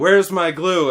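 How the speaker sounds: plain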